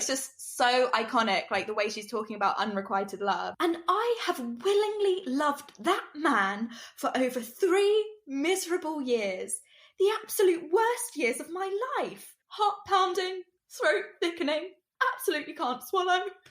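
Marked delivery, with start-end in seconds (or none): 3.6-16.2 put-on heavy English accent, higher. Quoting a film monologue about unrequited love: Kate Winslet impersonation. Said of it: "when I'm doing Kate Winslet impersonations".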